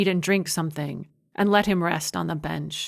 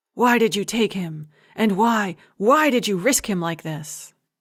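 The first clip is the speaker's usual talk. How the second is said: hissing; 3 semitones higher than usual. Giacomo questions Sauro out of Luca's earshot, hissed. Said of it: "he hissed".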